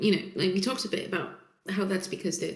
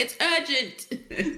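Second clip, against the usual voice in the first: yelling, higher pitch; 7 semitones higher than usual. Acting out a character hollering for Danny to come in. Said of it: "Magical starts hollering for Danny".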